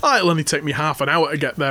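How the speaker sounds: normal talking voice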